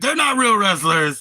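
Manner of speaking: acted annoyed anger. Retelling an argument with a man, imitating him getting mad. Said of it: "He would get mad".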